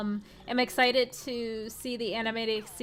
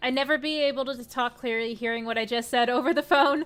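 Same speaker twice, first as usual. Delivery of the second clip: ordinary delivery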